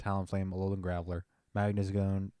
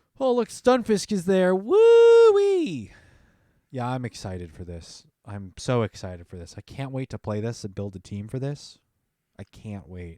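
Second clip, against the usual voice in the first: very loud, swooping, overdone sarcastic fake enthusiasm; 4 semitones higher, 11 dB louder than usual. Reacting to a cup lineup in a game: sarcastic fake excitement. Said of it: "that's sarcasm, sorry".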